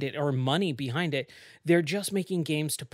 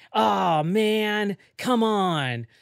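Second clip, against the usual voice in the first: bad, very slow, loud, raised, drawn-out put-on drawl; 5 semitones higher, 5 dB louder than usual. Imitating a game character's bad Jack Nicholson impression. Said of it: "a really bad Jack Nicholson impression".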